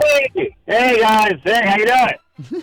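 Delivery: lively, energized, energetic, sing-song voice. Greeting the hosts as the call connects: energetic greeting. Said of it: "you sound, uh, energetic".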